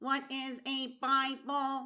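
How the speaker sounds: put-on, robot-like alien voice. Playing an alien after being asked to talk like one, robotic alien voice. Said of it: "You're a robot".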